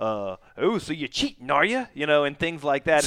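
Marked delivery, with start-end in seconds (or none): 0.0-1.9 mock-snarky tone, slower. Quoting the rule book's commentary on cheating, mock-snarky tone. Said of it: "It's written with this sort of snarky tone".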